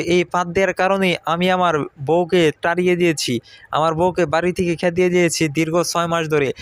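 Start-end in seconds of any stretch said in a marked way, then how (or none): none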